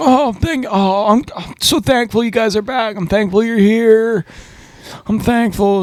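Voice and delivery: high gushing overly grateful voice, tripping over words. Retelling what a man said when they came back: imitating someone being overly thankful. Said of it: "He's just so thankful for us".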